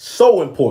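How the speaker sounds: strong stress on "so important". Explaining why legacy matters: stress on so important. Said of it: "I'm putting emphasis on the so important".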